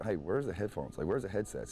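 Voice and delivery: normal talking voice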